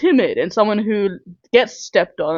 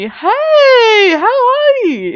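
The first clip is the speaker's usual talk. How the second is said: very high, very slow, sing-song fake-nice phone voice; 7 dB louder than usual. Speaker showing how they greet someone on a phone call, fake-nice phone voice. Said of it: "It's not a version of me that's real".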